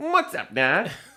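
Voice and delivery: cartoon rabbit voice. Taking a turn at impressions with the group, doing a Bugs Bunny impression. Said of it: "so we got to do Bugs Bunny".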